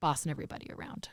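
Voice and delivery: joking, fast, low whisper.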